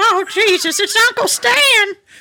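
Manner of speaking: comic voice, Irish-tinged lilt, very high pitch. Joking with someone about comedy, do an Irish-sounding Adam Sandler impression. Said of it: "Why does your Adam Sandler sound Irish?".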